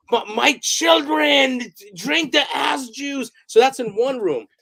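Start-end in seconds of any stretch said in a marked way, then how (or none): 0.1-3.3 slow, drawn-out, stumbling, high-pitched yell. Retelling what a performer playing a priest yelled: imitating someone yelling. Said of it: "and he's yelling".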